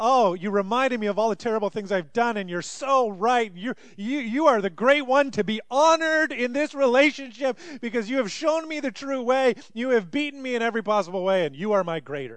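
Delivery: mock groveling, gushing, high and loud.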